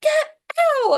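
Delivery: shrill, very high, very loud shriek. Retelling what her doctor said to him: imitating a scream. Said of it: "she just screams".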